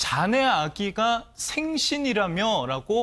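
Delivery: sneering mocking tone.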